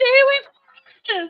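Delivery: shouting. Playing a character, the speaker yells a warning at the giants. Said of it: "I'm also gonna yell at the giants".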